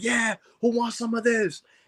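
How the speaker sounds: put-on screaming at a very high pitch. Retelling a fighter at the bag: imitating someone screaming. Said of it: "he is screaming like".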